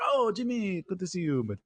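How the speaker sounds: put-on slow high French accent. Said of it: "I love how you went right into the the French accent".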